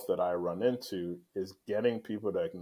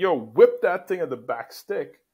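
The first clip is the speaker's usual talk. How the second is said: very loud, high-pitched yell; 8 semitones higher, 9 dB louder than usual. Acting out a coach calling to a player: imitating a coach yelling. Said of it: "even as I'm yelling".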